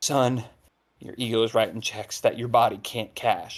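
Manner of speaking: leaned-in, close, in-character stage half-whisper. Leaning in over a downed foe in a game: half-whispering in character. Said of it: "lean in and whisper in his ear".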